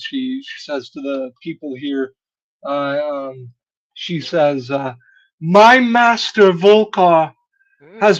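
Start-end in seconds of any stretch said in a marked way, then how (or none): 5.4-8.2 very loud and high, edged with anger. Voicing a woman speaking to the people here, some anger in tone. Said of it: "with some degree of anger in her tone".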